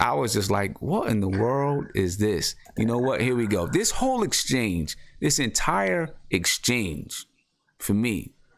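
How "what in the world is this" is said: plain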